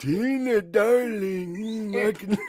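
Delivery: very high, squeaky zombie voice. Doing an impression for the others: [name] zombie impression. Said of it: "that's a perfect impression".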